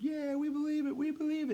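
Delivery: very high, excited crowd-style shout. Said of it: "they're, like, excited".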